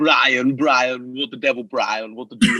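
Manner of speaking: put-on cartoon-style baby voice. Asked for their best impression, the speaker does a Stewie Griffin impression. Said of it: "I do quite a good Stewie Griffin".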